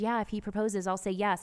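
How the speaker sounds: ordinary talk, nothing marked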